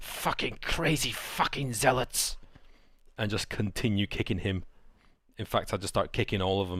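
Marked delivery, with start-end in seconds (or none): 0.0-2.4 spoken through gritted teeth, words dragged out. Kicking a defeated enemy in character: shouting through gritted teeth. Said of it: "just shouting with, through gritted teeth".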